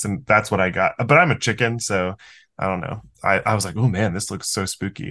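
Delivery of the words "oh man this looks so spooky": normal talking voice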